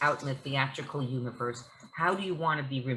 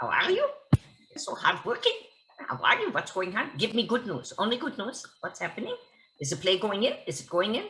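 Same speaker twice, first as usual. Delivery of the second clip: high, sing-song, every sentence end curling upward; 6 semitones higher than usual. Retelling a phone call where Dr. Ruth checks in, doing Dr. Ruth's rising sentence ends. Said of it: "even the ends of her sentences go up".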